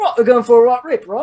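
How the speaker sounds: put-on high, loud Liverpool-style British accent. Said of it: "I do that Beatles".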